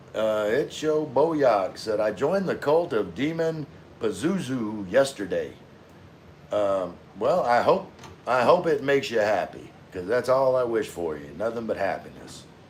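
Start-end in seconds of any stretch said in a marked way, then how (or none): none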